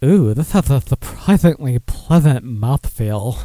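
heavy, suggestive, double-entendre delivery. Repeating the line for a joke the way another asked: suggestive innuendo delivery. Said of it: "say it like Dennis wants me to say it".

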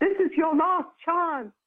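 put-on lovely Irish accent. Speaker quoting a stranger who insisted on a last chance, in a lovely Irish accent. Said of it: "he's saying this in an Irish accent".

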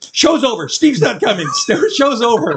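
shrill, very high-pitched loud yelling. Retelling how she told the audience to leave: imitating someone yelling. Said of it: "She was just yelling".

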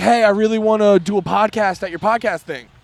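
ordinary talk

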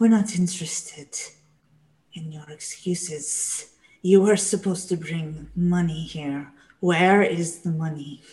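threatening, hissing snake voice. Voicing the other snake as it answers the players in the game, snake voice. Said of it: "the other snake voice say".

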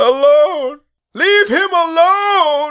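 very high, shrill, loud shriek. Game master voicing a corpse-like woman screaming at the player, screaming. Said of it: "and just screaming like".

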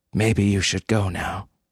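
ordinary delivery

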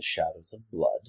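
low, hushed aside. A game narrator voices a character introducing himself to a stranger: said more quietly. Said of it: "he kind of says it more quietly".

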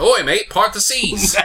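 put-on Australian accent. Joking about an Australian playing Moses in a movie: mock Australian accent. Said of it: "an Australian".

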